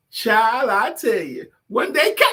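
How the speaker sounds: put-on drawn-out, high, slow grandmother voice. Showing how Tracy used to impersonate grandma: imitating grandma's voice. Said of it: "this is how Tracy used to impersonate grandma".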